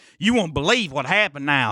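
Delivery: high Southern drawl. Imitating how the speaker's dad talks these days, with a drawl. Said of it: "he has that kind of draw".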